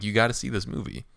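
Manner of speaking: plain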